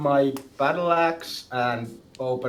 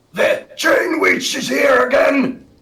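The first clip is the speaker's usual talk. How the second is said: put-on yell, much higher, louder; 12 semitones higher, 8 dB louder than usual. Speaker acts out banging on a neighbour's wall and yelling through it, acting out a yell. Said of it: "and yelling at the wall".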